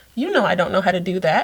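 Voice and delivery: play-acted, bone-dry, unbothered deadpan delivery. Retelling what a kid said back when told to mind her business: imitating a deadpan reply. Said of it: "she looks at me deadpanned and goes".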